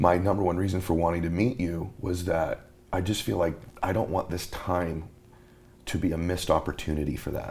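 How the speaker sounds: emotional delivery, voice getting choked up. Explaining the reason for wanting to meet, getting emotional. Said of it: "I'm getting emotional".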